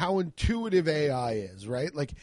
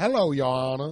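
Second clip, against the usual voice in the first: Southern accent with formal, lawyerly delivery; 3 dB louder than usual. Imagining walking into court as a Southern lawyer: Southern lawyer voice. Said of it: "adopt some Southern lawyeralities".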